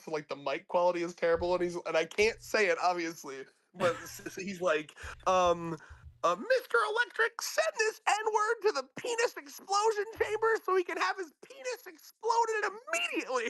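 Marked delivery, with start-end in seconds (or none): 6.4-13.5 put-on squeaky little-kid voice, very high. Describing a clip where someone does an impression of a kid: impression of a kid. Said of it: "someone doing like an impression of that kid".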